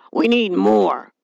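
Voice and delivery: words growled through the teeth. Narrator voicing the father speaking in a story, growling. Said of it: "growled the father".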